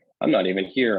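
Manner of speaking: ordinary talk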